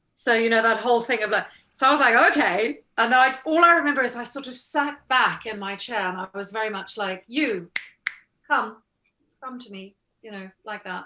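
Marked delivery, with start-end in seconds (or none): 7.3-10.0 put-on regal air, slower. Recalling sitting back in the chair during the meeting, playing up a regal manner. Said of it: "really play up the like regal thing".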